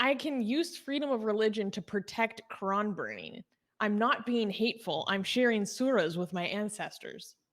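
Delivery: ordinary talk, nothing marked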